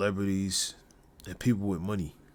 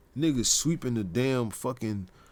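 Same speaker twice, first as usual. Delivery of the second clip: normal talking voice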